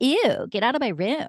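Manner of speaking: light, joking-around tone. Acting out how her mom imagined her joking with her boyfriend: mock-playful joking around. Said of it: "joking around with my boyfriend".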